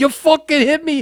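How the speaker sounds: put-on Boston accent. Retelling a locker-room argument after an eye injury: Kevin Sullivan's Boston accent. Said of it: "with that Boston accent".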